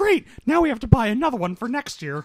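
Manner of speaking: very high, loud, laughing mock voice.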